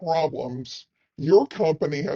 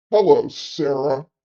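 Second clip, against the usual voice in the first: acted, repulsive, very slow, very drawn-out disgusting drawl. Retelling a meeting, speaker quotes a man greeting Sarah, [name]'s mock slow, disgusting tone. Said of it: "in a very slow, disgusting tone".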